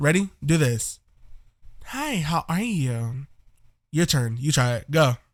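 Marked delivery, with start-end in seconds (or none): 1.8-3.3 put-on soft, slow, feminine girl's voice. Teaching viewers how to sound like a girl, modelling a line: girl's voice. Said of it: "you just want to copy me".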